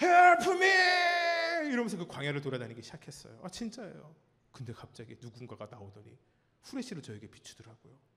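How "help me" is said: very high, loud booming shout. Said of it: "이 우렁찬 목소리로".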